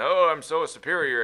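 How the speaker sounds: superior, sneering British accent, high and slow. Describing playing an Imperial officer in a game: mock condescending British voice. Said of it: "condescending British voice".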